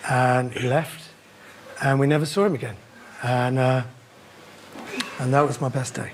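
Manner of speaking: dry, low, flat, expressionless deadpan. After telling a man to get out, a character goes on, deadpan. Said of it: "he's so deadpan".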